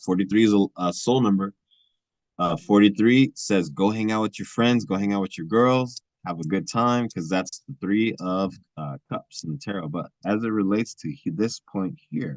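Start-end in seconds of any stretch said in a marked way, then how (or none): none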